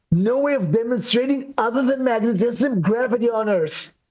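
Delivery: ordinary delivery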